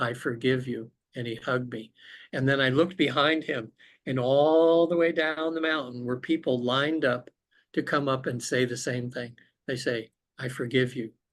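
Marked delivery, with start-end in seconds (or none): 0.0-0.9 whispering. Retelling what a smiling man whispered into the speaker's ear, retelling a whisper. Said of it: "he whispers in my ear".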